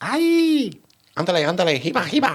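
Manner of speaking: squeaky cartoon mouse voice. Opening this week's episode with comic bits, doing a Speedy Gonzales impression. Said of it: "Followed by Speedy Gonzales".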